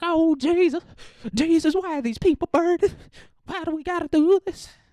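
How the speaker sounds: very high, hysterical, frantic wailing. Retelling how the villagers react, rolling on the ground: imitating frantic freaking out.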